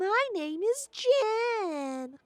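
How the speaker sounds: very high, chirpy, tiny critter voice. In a tabletop game, a tiny creature introduces itself to a player, chirping creature voice. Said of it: "the creature replies, chirping".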